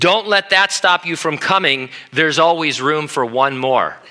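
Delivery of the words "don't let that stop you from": plain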